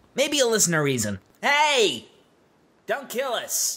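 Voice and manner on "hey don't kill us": shouting, much slower. The enemy calls out to soldiers who mean to subdue him, shouting. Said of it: "He raised his voice at me".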